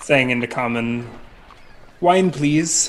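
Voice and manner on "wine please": put-on German accent, higher and louder. Role-playing a character ordering wine at a bar, put-on german accent. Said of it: "Need to work on my German accent".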